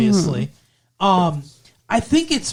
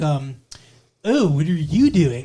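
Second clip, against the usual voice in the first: put-on California accent, lower pitch; 2 semitones lower than usual. Imitating how an actress spoke in a movie, in a california accent. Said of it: "she's trying to do a California accent".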